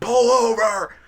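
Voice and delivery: frantic, panicked, very high shriek. Retelling yelling to the driver ahead on the road in a monsoon, retelling a scream. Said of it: "I'm screaming".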